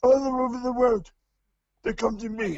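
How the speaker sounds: snarling, crazed announcer delivery. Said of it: "My impression of, of his promos".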